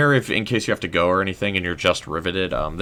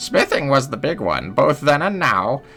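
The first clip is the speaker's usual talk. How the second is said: put-on high, pitched-up old lady voice. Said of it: "we're gonna keep going with the old lady voice".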